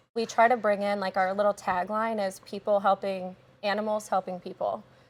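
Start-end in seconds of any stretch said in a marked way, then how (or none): none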